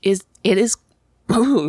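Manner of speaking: breaking voice, cracking mid-phrase. While recommending good copies of a movie, the speaker talks with a cracking voice. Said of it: "I'm a teenage boy with a cracking voice".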